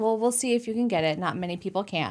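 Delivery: plain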